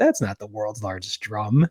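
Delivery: put-on dry, dismissive, sarcastic tone. Retelling a friend's remark at a stadium: imitating a friend's sarcastic remark. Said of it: "Knoppik just sarcastically".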